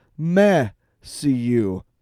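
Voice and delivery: smug, self-satisfied, proud tone. Imitating the man from a clip just played: imitating a proud tone. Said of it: "the pride in his voice when he was like".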